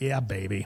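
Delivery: chuckling, laughing, gleeful cheer of satisfaction. Retelling sitting back in bad weather: retelling own past laughing line. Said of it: "I'm sitting back just laughing, going".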